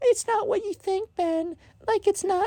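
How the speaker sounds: put-on tiny, very high, very quiet little child voice. Retelling a scene, voicing the little sister, Ben's little sister voice. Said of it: "Ben's little sister voice".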